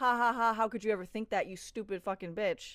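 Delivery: ordinary delivery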